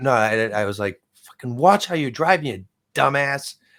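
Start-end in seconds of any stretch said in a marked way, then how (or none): 1.3-3.6 mock high, raised hollered outburst. Retelling shouting at another driver from an open car window: retelling a shout. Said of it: "I started shouting at the guy in English".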